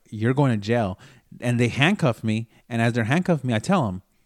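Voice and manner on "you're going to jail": ordinary talk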